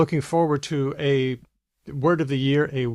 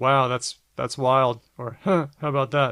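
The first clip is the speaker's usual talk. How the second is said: rude, sarcastic tone. Showing how a reaction phrase is used: rude and sarcastic. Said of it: "the way you said it sounded incredibly rude and sarcastic".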